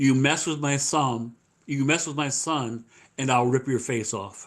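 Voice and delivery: acted, dead-serious, very stern and menacing tone. Retelling what a dad said while shaking hands, in a mock very stern voice. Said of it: "he says to me in a very stern voice".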